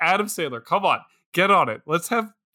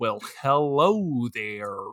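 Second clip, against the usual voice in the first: put-on, stock, generic American accent; 6 semitones lower than usual. Imitating how foreigners do an American impression: John Wayne impression. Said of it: "they all just sound like John Wayne".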